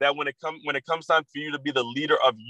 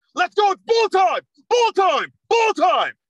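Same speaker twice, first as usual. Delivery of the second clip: high, loud, commanding, swooping holler; 6 dB louder than usual. Retelling how the coach got the team up on a silent football field, imitating Coach P yelling. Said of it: "you hear Coach P's voice yell".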